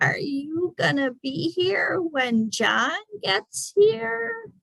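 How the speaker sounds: slow, high, drawn-out screechy voice. It looks straight at the man and asks him, slow, screechy voice. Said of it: "said in a slow, screechy voice".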